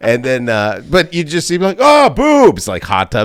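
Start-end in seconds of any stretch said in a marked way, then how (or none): 1.8-2.7 very high, very loud, thrilled, excited squeal. Recalling eighties movies, imitating an excited viewer. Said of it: "you're so excited for boobs".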